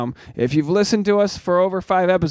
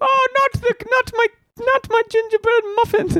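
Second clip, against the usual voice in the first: put-on cartoon cookie voice, higher pitch. Doing the Shrek character who pleads while being eaten: Gingerbread Man voice. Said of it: "what does he say when he gets eaten".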